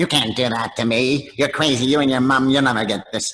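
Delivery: mean, small, high-pitched puppet voice. Recalling dubbing the puppet Slappy, the speaker does a mean little Slappy voice. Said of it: "it was a mean, weird sounding little voice".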